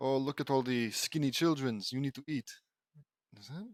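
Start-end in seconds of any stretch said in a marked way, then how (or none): 0.0-2.5 put-on German-ish accent. Storyteller voices the enemy Grandma Stuff'em greeting the children, in a German accent. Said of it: "German accent?".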